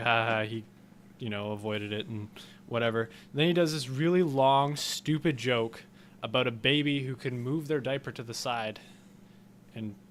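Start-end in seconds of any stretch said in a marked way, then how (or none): none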